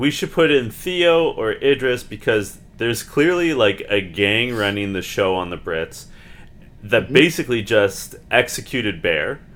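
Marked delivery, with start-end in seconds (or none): none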